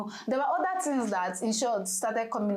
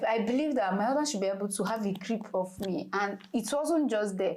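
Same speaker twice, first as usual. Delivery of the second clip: normal talking voice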